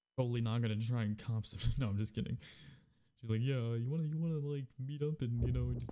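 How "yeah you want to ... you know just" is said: put-on nerdy dweeb voice, higher, slower. Retelling what she said to him: internet dweeb voice. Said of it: "That was my internet dweeb voice".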